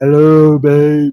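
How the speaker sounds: put-on super deep, very low voice. Describing a man's voice and imitating his greeting in a super deep voice. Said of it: "It was his voice super deep".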